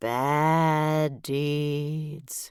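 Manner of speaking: long, drawn-out, eerie, spooky ghostly moan. Reading a story aloud, narrator as ghost drawing words out: stretched-out spooky voice. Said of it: "I stretched out the words as long as I could".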